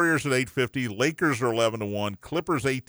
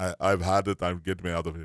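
put-on speaking with Russian accent; 5 semitones lower than usual. Imitating a player who wants out of his team: Joel Embiid impression in Russian accent. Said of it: "I didn't know he was Russian".

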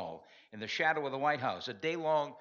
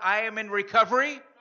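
very loud, proud voice, pitched high; 7 semitones higher, 9 dB louder than usual. Leading the room to declare recovery: loud and proud. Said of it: "Say it loud and say it proud".

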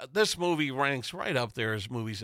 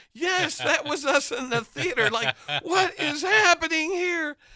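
high, loud, excited with laughter. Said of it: "And I'm like".

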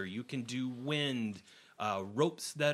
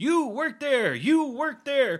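very high, very loud shouted, barking voice; 9 dB louder than usual. Game master narrating the party's arrival on the main deck, Scourge yelling orders. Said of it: "You hear Scourge yelling out jobs".

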